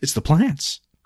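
calm, cheerful matter-of-fact tone. Retelling a movie character's theory in his nursery: imitating a matter-of-fact, joyful tone. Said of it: "matter of fact, like, not worried, joyful".

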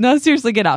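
high, panicked, panic starting to take hold. Retelling being pinned down in play and laughing, acting out past panic. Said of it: "I would start panicking".

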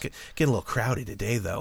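quiet, fast, muttered sleazy villain voice.

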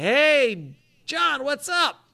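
very high, very slow call with drawn-out "Hey". Storyteller recalls a man calling out to a director, retelling a yell. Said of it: "he yells out his name".

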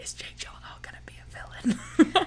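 whispering, high-pitched. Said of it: "leans over and whispers to me".

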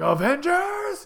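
very high, loud rallying yell. Retelling how someone yelled avengers, shouted avengers. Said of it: "He yelled Avengers. He was like".

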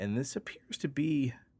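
voice cracking, breaking on the words. Explaining a cryptid called the Ningen to a listener, voice cracking. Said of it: "my voice just cracked".

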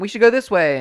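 high, loud, eager calling out. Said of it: "He's like".

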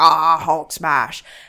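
brutish, rampaging monster voice. Describing how Hulk talks in the early movies: Hulk voice. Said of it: "he turns into Hulk and he's just like".

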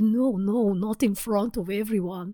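put-on vague European accent. Retelling a scene, imitating a character in a vague European accent. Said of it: "it's actually a good impression".

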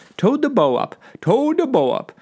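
made-up impression voice. Recalling towing a boat as a teen, repeating it in an impression of nothing real. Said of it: "That's an impression of something that doesn't exist".

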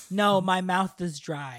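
put-on, defensive tone. Reenacting an argument between two contestants, imitating Sandra. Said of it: "I'm Sandra".

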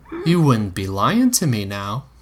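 ordinary delivery

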